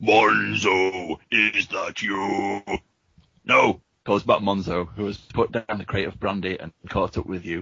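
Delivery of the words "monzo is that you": deep voice, very slow, one word stretched out. Narrator reads a voice calling up out of the darkness, deep booming voice. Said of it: "a deep voice booms up out of the darkness".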